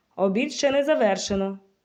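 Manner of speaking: severe, no-nonsense tone. The director tells the children at lunch, stern. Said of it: "суворо сказала директор".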